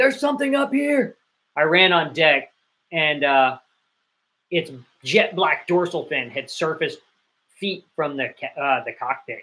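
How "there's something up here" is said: mock very high, shrill, sudden shout. Retelling how a yachtsman on watch spotted something: imitating someone yelling. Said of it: "He starts yelling".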